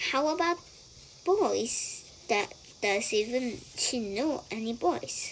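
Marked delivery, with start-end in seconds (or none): none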